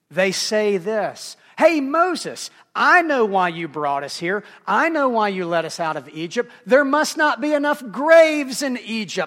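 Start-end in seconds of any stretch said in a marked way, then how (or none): 1.6-9.3 very loud, cynical, swooping sarcasm. Retelling what the scared people said to Moses: imitating sarcastic complaint. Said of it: "they resort to sarcasm and cynicism".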